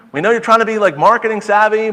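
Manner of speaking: high-pitched, loud, incredulous scolding tone.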